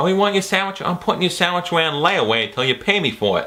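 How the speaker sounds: put-on, attempted Boston accent. Reviewing a movie, acting out a scene from it, attempted boston accent. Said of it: "Was that a Boston accent?".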